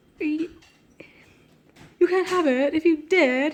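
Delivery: loud, clumsy put-on British accent. Reading a story aloud, voicing a character: attempted british accent. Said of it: "That's so offensive to the British".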